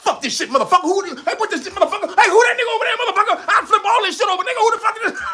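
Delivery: very high, furious, acted-out ranting robot voice. Describing a hilarious voiceover someone does, imitating a mock-angry rant.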